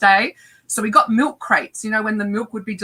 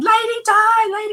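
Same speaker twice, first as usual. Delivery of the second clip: mock very high, squealed scream; 13 semitones higher than usual. Retelling calling out from a milk crate while shaking hands: imitating own past screaming. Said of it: "But I'm screaming".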